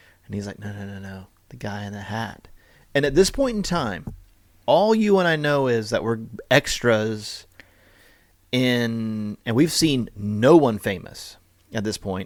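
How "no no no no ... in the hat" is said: put-on whisper, lower and quieter. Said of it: "kinda whispers in my ear".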